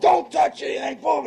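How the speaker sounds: high-pitched, barked shout.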